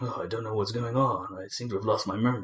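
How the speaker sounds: acted moody deep-voiced man. Reviewing a game's voice acting, mimicking the player character in a moody deep-voiced guy voice. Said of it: "deep voice kind of guy saying".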